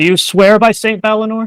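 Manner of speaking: high calling voice. A character walks up to a cracked doorway and yells through, yelling through a door. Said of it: "she's going to yell through".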